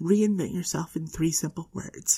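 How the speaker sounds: ordinary delivery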